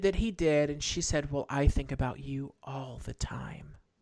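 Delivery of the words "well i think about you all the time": fake attractive, enticing delivery. Retelling what Pam said to Billy, put-on attractive Pam voice. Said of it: "I choose to believe it was said in that voice".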